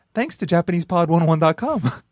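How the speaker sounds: ordinary delivery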